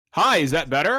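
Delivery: put-on loud announcer delivery. Streamer checks the mic setup with the others, announcer voice. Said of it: "Get back into announcer voice".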